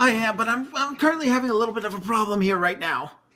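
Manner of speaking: put-on teen boy voice. Voicing a fifteen-year-old boy who stops to look at adventurers: teenage boy character. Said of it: "a young boy about fifteen".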